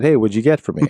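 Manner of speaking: usual speaking voice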